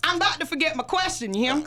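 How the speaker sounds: Louisianan accent. Teasing another speaker about forgetting a question: Louisiana accent. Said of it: "you went off into, uh, a Louisianan accent".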